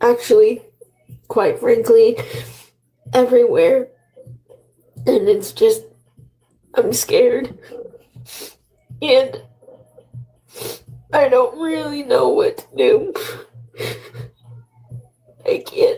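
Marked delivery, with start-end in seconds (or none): 5.1-16.0 crying, tearful, much higher pitch. Telling friends on stream about a very sick dad, crying. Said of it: "Why are you crying right now?".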